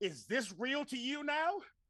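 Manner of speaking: very high battle yell, climbing in pitch. Attacking an ogre with a war axe in a game: yelling in character. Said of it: "I smash him with it while I'm yelling".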